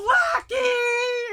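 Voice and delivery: mock tearful wail, very high, sobbing. Retelling how a friend came back from the movie: imitating someone crying out. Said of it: "she had obviously been crying".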